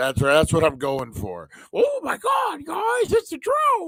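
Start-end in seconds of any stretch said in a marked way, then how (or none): 1.7-3.9 very high squeal with big swooping pitch, cartoon panic. Showing off an acting voice on seeing drones: Shaggy-and-Scooby mix voice. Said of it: "a mix of Shaggy and Scooby together".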